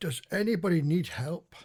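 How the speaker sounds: loud call-out. A player character calls out to a group of knights in a tabletop game: shouting. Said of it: "I will shout out".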